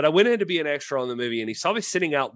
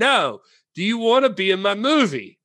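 very bad, clumsy put-on Italian accent; 8 semitones higher, 4 dB louder than usual. Retelling a man asking her to be in his movie, bad Italian accent impression. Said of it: "I'm going to do a very bad Italian impersonation".

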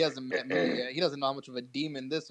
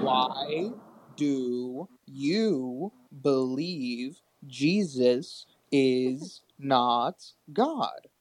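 very slow, deliberate, word-by-word delivery; 4 dB louder than usual. Repeating his question to the other person, this time asking very slowly. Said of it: "I'll ask my question slowly this time".

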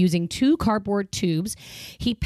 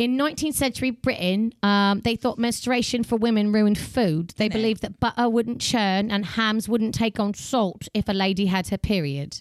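put-on British accent. Reading out a fact about nineteenth century brits: put-on british accent. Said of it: "I'm gonna read this whole one in accent".

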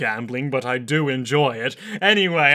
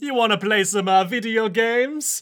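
cartoonish Italian accent, pitched up; 8 semitones higher than usual. Showing off a new comedy character to the listeners, in Terence T. Darby Mario voice. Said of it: "offend some of our Italian listeners".

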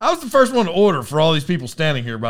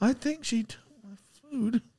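very quiet, hushed, very high-pitched muttering; 9 semitones higher, 10 dB quieter than usual. Retelling an old lady waiting on her food: imitating someone mumbling. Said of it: "She's just mumbling to herself".

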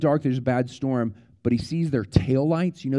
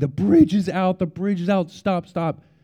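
mock, high, repeated yell with raised voice; 6 semitones higher than usual. Telling of a man running after a car for it to stop, imitating someone yelling.

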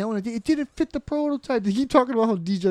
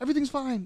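acted nervous, placating, scared tone, higher pitch; 5 semitones higher, 6 dB quieter than usual. Recalling a character trying to appease Mac: imitating Charlie sounding scared. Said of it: "kinda, like, scared".

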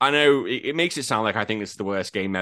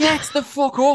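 high-pitched, slow, angry yell. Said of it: "I was like".

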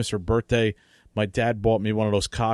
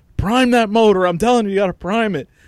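mock scream, higher and louder; 10 semitones higher, 7 dB louder than usual. Retelling a father telling a brother to prime the motor: imitating father screaming. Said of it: "my father's screaming at him".

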